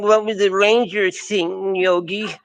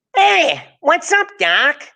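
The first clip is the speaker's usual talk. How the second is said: very slow, sing-song, swooping cartoon voice, stretched out; 8 semitones higher than usual. Naming cartoon voices one by one: Bugs Bunny voice. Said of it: "Bugs Bunny".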